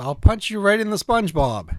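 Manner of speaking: ordinary delivery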